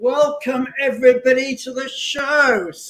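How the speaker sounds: high, eager, excited show-host voice, drawn out. Host welcoming everybody to the show, enthusiastic. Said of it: "I don't know why I'm sounding so enthusiastic".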